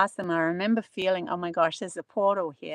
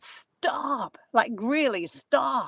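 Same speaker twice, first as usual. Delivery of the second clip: put-on sudden, urgent scream; 4 semitones higher than usual. Retelling how a companion behind the speaker suddenly screamed out, imitating someone screaming. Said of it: "he screamed out".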